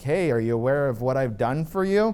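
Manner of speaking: normal talking voice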